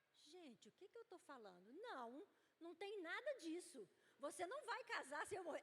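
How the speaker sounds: put-on sharp scolding. Retelling the husband's sudden change after a pause: imitating husband scolding her. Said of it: "ele começou a brigar comigo".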